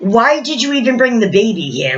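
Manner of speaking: mocking, sarcastic, jabbing delivery. Retelling what a man said to a mother about her baby: imitating a sarcastic remark.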